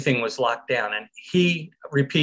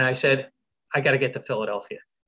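normal talking voice

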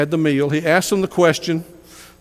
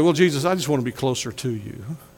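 put-on sanctimonious, pious, holy tone; 3 semitones lower, 5 dB quieter than usual. Imagining what someone could have said to the Master, mock-pious. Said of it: "they could have said it very piously".

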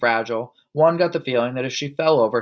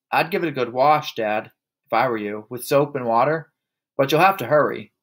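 ordinary delivery, nothing marked

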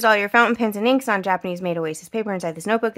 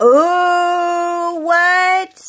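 high, thrilled, excited yell, "oh" stretched long; 8 semitones higher, 5 dB louder than usual. Removing the tape and revealing what's inside, yelling excitedly. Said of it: "Sorry, I'm yelling".

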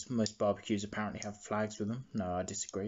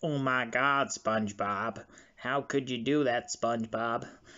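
put-on, thoroughly depressed cartoon voice; 4 dB louder than usual. Describing a Squidward minifigure, then voicing its line: put-on depressed Squidward voice. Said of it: "Squidward in his usual depressed expression, going".

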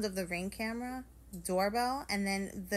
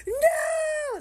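shrill, very high, very loud, long drawn-out scream; 10 dB louder than usual. Watching her husband share the Wi-Fi password on camera: retelling screaming at her phone. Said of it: "And I'm screaming at my phone".

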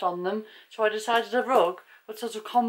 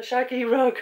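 giggling and laughing through the words; 4 semitones higher, 4 dB louder than usual. Reading out the name of a new rug, laughing while talking. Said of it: "I'm just laughing at the name of it".

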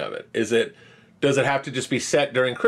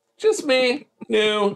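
put-on cute quirky voice, pitched higher; 10 semitones higher than usual. Showing the other speaker a little Zooey Deschanel: Zooey Deschanel impression. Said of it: "You wanna see a little Deschanel?".

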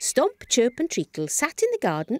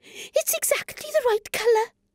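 very high, thrilled, excited cry; 10 semitones higher than usual. Treacle finds the jam she needs for her painting: excited exclaiming. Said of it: "Cried Treacle excitedly".

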